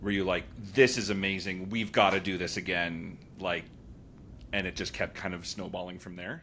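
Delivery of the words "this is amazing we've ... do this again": normal talking voice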